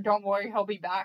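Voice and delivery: ordinary talk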